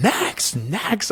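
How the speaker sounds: mock impatient screaming, very high-pitched. Retelling the customs line, she repeats what she yelled at the woman ahead: retelling screaming 'next, next'. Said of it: "I'm screaming".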